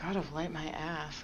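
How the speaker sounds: slow, very quiet, hushed mutter under the breath. Voicing a character's aside to herself: muttering under her breath. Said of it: "mutter under her breath".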